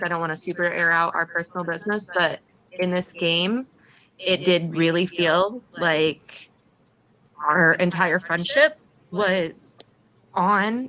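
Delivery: emotional voice catching, choking up, near tears. Speaking to a friend about feeling hurt by them, getting emotional. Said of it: "I'm getting emotional".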